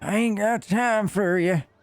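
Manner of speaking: put-on high-pitched, very slow elderly woman's voice. Showing how the line sounds in an old lady's voice. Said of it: "Try to do an old lady's voice".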